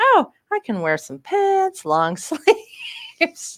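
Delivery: mock cheerful, high, slow singsong voice.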